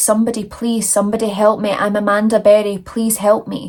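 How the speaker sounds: ordinary talk, nothing marked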